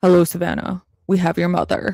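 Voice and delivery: put-on old-school menacing phone voice. Describing a note's tone by imitating a ransom call, ransom caller voice. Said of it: "the first note is very much like".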